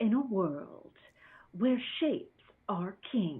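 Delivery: hushed, dramatic film trailer announcer voice. Asked for a recap of tonight's creation, speaker launches into a movie trailer voice. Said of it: "movie trailer voice".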